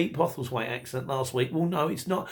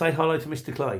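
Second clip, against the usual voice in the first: normal talking voice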